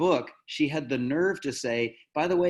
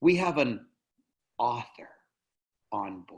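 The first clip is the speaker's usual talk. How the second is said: put-on awestruck tone, full of reverence; 3 semitones lower than usual. Retelling a pilot's announcement to the passengers: imitating a reverent, awed announcement. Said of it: "he said it like God himself was there".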